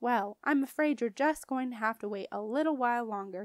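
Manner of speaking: plain reading voice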